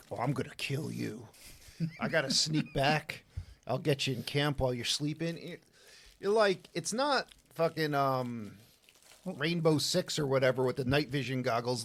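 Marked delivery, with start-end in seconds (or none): 0.1-5.4 conniving, scheming spider voice. Retelling a movie scene, voicing the giant spider: conniving spider voice. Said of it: "this giant-ass spider is like".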